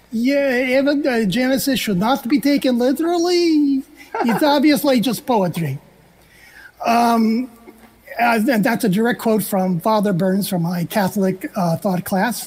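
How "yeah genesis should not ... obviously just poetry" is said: very bad fake Hungarian accent, high, "yeah" drawn out. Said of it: "I did that in a very bad Hungarian accent".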